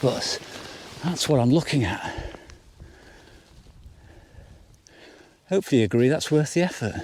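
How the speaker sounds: slightly out of breath. Climbing up to get a view, talking to the audience, slightly out of breath. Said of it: "pardon me for being slightly out of breath".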